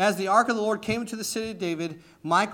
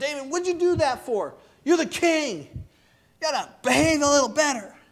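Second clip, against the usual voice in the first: put-on sarcastic scolding, higher; 7 semitones higher than usual. Retelling how a wife rebuked king david, imitating sarcastic scolding. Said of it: "There's a sarcasm".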